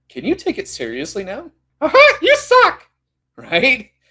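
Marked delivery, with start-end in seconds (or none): 1.8-2.8 high, squeaky cartoon-style voice. The speaker imagines the negative inner voice sounding like Mickey Mouse: Mickey Mouse voice. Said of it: "all of a sudden it sounded like Mickey Mouse?".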